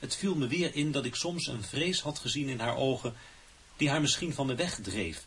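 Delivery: ordinary delivery, nothing marked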